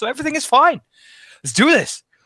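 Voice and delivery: racing, very high-pitched, rapid-fire gabble. A character who feels high, heart racing, starts talking really fast. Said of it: "I'm starting to talk really fast".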